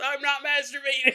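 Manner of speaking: very high, out-loud yell, screamed. Acting out a character who screams out loud in his house: acting out a scream. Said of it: "He screams out loud in his house".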